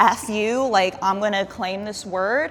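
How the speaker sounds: ordinary delivery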